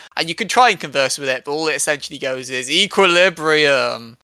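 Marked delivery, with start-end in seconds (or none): 2.7-4.0 put-on booming voice. Describing a game voice that booms in your head: imitating a booming voice. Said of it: "a voice booms in your head going".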